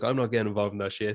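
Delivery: plain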